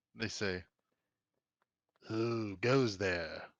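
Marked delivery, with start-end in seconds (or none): 2.1-3.4 farm-animal pig character voice. Voicing a pig with glowing eyes, stepping forward: voicing a pig. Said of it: "the pig says".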